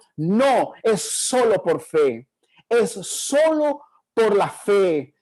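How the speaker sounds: deliberate, very slow, drawn-out proclaiming delivery. Retelling the reformers' answer to the Roman church: imitating a thunderous voice. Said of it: "con voz de trueno y dijeron".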